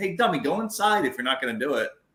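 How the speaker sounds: snide, mocking, sarcastic jeering tone. Retelling what a neighbor told confused kids at his porch: imitating a sarcastic neighbor. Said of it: "he'd be sarcastic to 'em".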